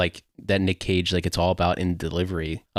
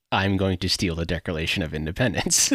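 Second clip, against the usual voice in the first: plain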